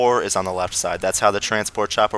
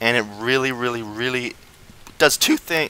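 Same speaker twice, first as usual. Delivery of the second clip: voice cracking and breaking mid-phrase; 3 semitones higher than usual. Explaining a game tactic to viewers, the speaker's voice cracks: voice cracking. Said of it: "sorry, voice crack".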